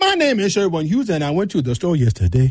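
Nigerian-accented speech. Showing how a nigerian would say the same sentence: nigerian accent, starting very high. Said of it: "A Nigerian will start very, very high".

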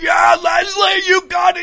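shrill, high, screaming cheer. Retelling how a team supporter screamed encouragement near the finish line: imitating Flip screaming. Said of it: "And he's screaming".

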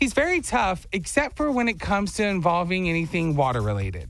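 put-on girly, girl's voice. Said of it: "You hear his girl voice".

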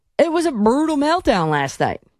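put-on Texan accent throughout. Quoting what a caller said the night before, doing the Texas accent. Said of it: "I'm doing the Texas accent".

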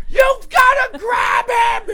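acted-out screaming, very high-pitched and shouted. Retelling shouting at a dog owner: retelling a scream. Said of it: "I'm screaming at her".

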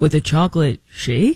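rising, question-like lilt on "shake". Showing how Scott Pelley might end a line on a question: Scott Pelley voice ending on a question. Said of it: "do a question at the end".

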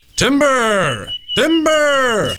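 shouting. In a radio ad, warning everybody that a leaning tree may fall, shouting timber. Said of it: "Why do you keep yelling timber?".

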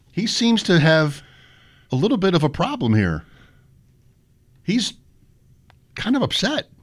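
calm, understated play-by-play voice. Retelling a huge hockey brawl as the announcer: imitating a calm, understated hockey announcer. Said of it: "He sounds like he's broadcasting from a library".

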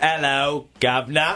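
failed fake British accent. Admitting they can't do it, then attempting a bad British accent. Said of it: "I can't do the British accent".

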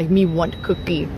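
very deep, low monster voice. Repeating a child's favorite-treat answer, in the Cookie Monster voice. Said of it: "I have to say it in the Cookie Monster voice".

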